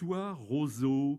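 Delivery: ordinary delivery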